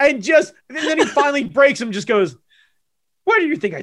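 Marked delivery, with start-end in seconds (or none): 3.2-3.8 goading, needling, egging-on tone. Acting out a scene where Yoda finally breaks Luke: Yoda voice. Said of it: "Ghost Yoda fucking egging Luke on".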